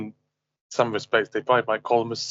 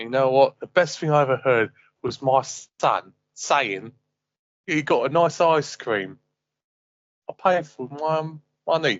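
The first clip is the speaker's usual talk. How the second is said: put-on East London Cockney accent; 3 semitones higher than usual. Playing a dad talking about a day out with his kids, in an Eastern Cockney accent. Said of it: "using the whole Eastern Cockney accent".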